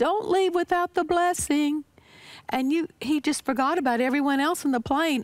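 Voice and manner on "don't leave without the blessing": put-on loud calling voice, higher pitch. Retelling what he said as the plane landed: imitating a loud voice. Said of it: "with this loud voice".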